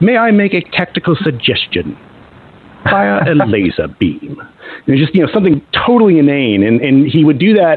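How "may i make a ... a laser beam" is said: animated character voice, pitch swinging widely throughout. Retelling how a brother interrupted games in a Peter Cushing voice. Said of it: "in his best Peter Cushing be like".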